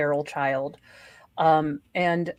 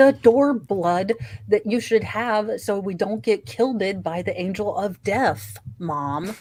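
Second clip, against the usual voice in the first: mock patronizing, slow, talking-down condescending tone; 3 semitones higher than usual. Retelling a son's answer about the door blood: imitating a condescending tone. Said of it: "in that tone, like, I am an effing moron".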